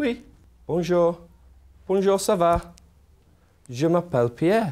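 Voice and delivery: bashful, timid, shy puppet voice. Voicing a shy puppet introduced to the class: shy Pierre puppet voice. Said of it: "He's very shy".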